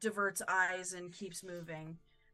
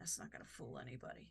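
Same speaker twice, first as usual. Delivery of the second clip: much quieter, lower, faster mutter under the breath; 7 semitones lower, 12 dB quieter than usual. A game master voices a character who glances around quickly, muttered under his breath. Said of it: "under his breath, not saying very loudly".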